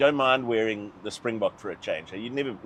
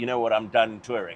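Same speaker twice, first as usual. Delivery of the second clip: normal talking voice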